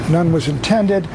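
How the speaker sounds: normal talking voice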